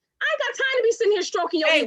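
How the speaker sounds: shouting. Complaining to others about a partner's need for praise: yelling. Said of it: "why you yelling?".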